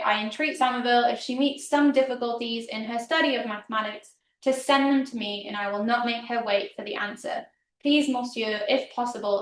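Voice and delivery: ordinary talk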